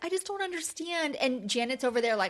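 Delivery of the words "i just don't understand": very emotional, pitched-up, pleading voice. Retelling how Nia sounded in the scene: imitating Nia, emotional. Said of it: "Nia's, like, so emotional".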